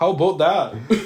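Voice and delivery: pronounced put-on Canadian accent, high and loud. Joining in on a movie scene's lines: imitating a Canadian accent. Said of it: "their Canadian accents are jumping out".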